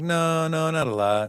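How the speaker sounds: very slow, lingering, drawn-out delivery. Teasing a co-host by repeating how she just answered: imitating Ashley's reply. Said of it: "The way you said it, you're like".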